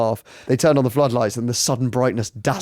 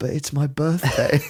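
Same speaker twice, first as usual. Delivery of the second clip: small, shrunken, soft little voice, barely there; 2 semitones higher than usual. Retelling what the Crystal Palace chairman said after the sacking, in Simon Jordan's small voice. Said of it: "said in a small voice".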